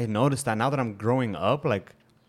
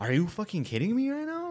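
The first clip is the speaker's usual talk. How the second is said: put-on annoyed, shrill, very high, rising, swooping voice; 11 semitones higher, 3 dB quieter than usual. Retelling what a customer said when told his order can't be taken: imitating an annoyed customer. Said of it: "makes a shitty ass, annoyed face".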